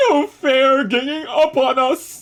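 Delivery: very high, loud, long, drawn-out spooky ghostly wail. Narrating a ghost fight, a ghost cries out; wailing ghost. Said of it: "A ghost wailed".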